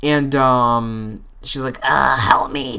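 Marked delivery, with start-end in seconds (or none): 1.8-2.8 strained, weird, fake choked gasping voice. Retelling what she said while allegedly choking, fake choking voice. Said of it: "talking like this weird sort of fake choking voice".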